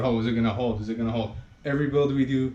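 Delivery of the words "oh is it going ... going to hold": normal talking voice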